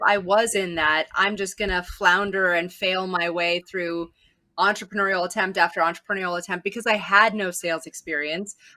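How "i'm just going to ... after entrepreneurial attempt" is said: ordinary talk, nothing marked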